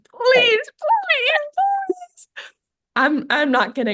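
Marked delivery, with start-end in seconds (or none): 0.3-2.3 put-on very high, desperate, frantic pleading scream. Retelling begging someone to switch so she can meet him: retelling a screaming plea. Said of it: "I'm screaming at this point".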